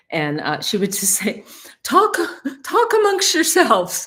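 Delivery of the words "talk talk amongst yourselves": put-on very high, thick Long Island woman accent. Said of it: "with thick accent and stuff".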